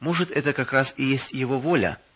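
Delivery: plain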